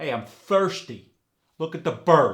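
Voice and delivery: very loud New York accent, R kept hard. Explaining new york pronunciation, giving an example in a stereotypical new york accent. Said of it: "you just keep the hard R in the word".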